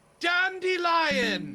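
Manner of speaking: shrill, very high, very loud call. Working the food court grill, someone calls across the court: imitating a shrill call. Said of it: "I hear a shrill voice from across the food court go".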